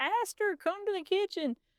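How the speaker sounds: very high-pitched put-on Southern accent. Recalling a woman at camp calling over the walkie-talkie; imitating a southern accent. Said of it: "had a wonderful Southern accent".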